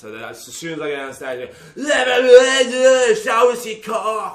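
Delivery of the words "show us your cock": put-on English accent. Performer retelling his opening line on stage, put-on english accent. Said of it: "But in an English accent".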